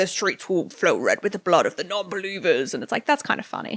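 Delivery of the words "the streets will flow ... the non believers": demonic, otherworldly voice. Describing a comedy bit, imitating a performer's demon voice. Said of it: "he does like a demon voice".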